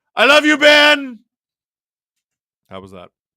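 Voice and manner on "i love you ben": very high, loud, drawn-out belted delivery. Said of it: "Give me your best [name] impression".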